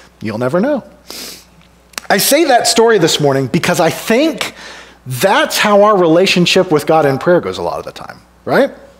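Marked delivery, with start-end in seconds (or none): 0.2-0.9 put-on deadpan, dropped low and dead straight. Telling a story, give Tom Hanks's answer to a puzzled man, imitating a deadpan reply. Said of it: "Tom Hanks deadpan says".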